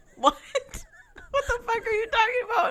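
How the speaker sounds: high, laughing disbelief.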